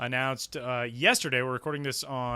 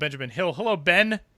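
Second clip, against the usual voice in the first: raised, edgy, clearly enunciated voice; 3 semitones higher, 6 dB louder than usual. Introducing Benjamin Hill for the next segment, with an edge in the voice. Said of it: "You had an edge in your voice".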